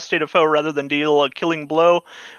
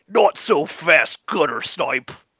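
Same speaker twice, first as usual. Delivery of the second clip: gruff, rough-edged voice. Voicing a figure the players suddenly hear, in a gruff voice. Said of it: "you hear a gruff voice".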